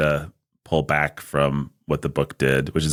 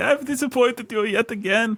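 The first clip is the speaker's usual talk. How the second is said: put-on weird Yiddish accent, pitched way up. A host imitates what Brandon says to his parents' picture, in Brandon's weird Yiddish accent. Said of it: "In some weird Yiddish accent".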